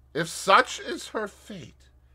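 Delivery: halting, uneasy, hesitant, very high-pitched. Asked whether a sick woman will die, a man answers, muttering hesitantly. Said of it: "muttered in a hesitating manner".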